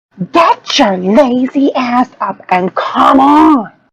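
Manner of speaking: full-volume, top-of-lungs scream, high, drawn out. Playing a character yelling at an idle ally to follow: screaming at the top of lungs. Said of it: "scream at him at the top of my lungs".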